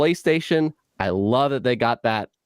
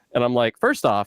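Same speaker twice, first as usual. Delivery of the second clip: plain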